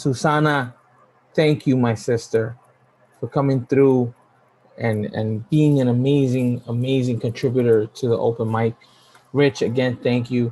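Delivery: voice on the verge of tears, fighting them back. Thanking people at the open mic's first anniversary, holding back tears. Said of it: "I am about to start crying".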